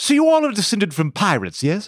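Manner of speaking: high, cartoonish aristocrat voice. Imitating Prince Philip stepping off a ship in Barbados, 1920s aristocratic cartoon voice. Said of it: "get off the gangplank of the steamer ship that he just arrived on and go".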